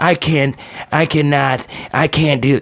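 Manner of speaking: put-on hoarse, rough voice. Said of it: "because [name] said".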